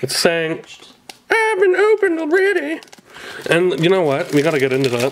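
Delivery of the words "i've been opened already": squeaky, very high-pitched cartoon voice. Voicing a chipped booster box that says it was opened: South Park-style voice. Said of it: "That sounded like a voice off of South Park".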